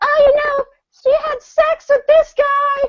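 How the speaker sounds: very high, jealous, accusing yell. Retelling a girl yelling at them from blocks behind: imitating a girl yelling. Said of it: "just yelling at us".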